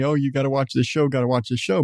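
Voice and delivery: ordinary talk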